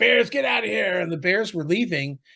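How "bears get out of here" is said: raw, high, rough commanding shout. Telling how a woman drove bears from her camp, imitating someone yelling. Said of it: "she's yelling".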